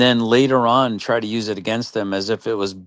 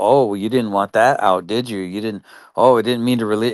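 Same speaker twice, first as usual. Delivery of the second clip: oily, slimy, smug, self-satisfied taunting. Mocking someone's words from a video, imitating a slimy, smug tone. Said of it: "looking all slimy and, like, all proud of himself".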